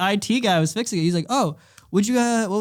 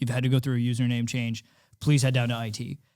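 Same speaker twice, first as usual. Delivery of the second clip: put-on super-serious voice, lower, quieter; 8 semitones lower, 4 dB quieter than usual. Retelling what they said when handing back the backpack, mock super-serious voice. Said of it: "like super serious voice".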